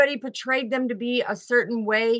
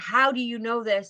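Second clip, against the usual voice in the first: mock choked-up man's voice, slower. Retelling a man's reaction on the phone, the speaker imitates him: choked up. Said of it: "he's all choked up".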